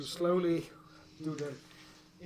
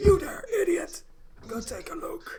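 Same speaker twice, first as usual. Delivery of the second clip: put-on very high-pitched aged voice with commanding tone; 13 semitones higher than usual. Game master voicing a figure giving orders after a noise: aged commanding voice. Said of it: "As you hear a relatively aged voice".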